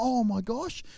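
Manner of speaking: mock frazzled, stressed, alarmed outburst. Retelling own reaction to hearing of a violent child: imitating own stressed reaction. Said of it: "and I'm stressing out".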